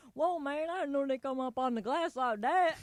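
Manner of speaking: hardcore Louisiana drawl. Retelling a mic'd-up football player at his first hockey game, hardcore Louisiana accent. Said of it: "he has like a hardcore Louisiana accent".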